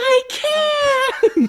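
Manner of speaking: mock shrill, very high-pitched screamed cry. Retelling his own words about to collapse in a race: retelling a scream. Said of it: "I screamed".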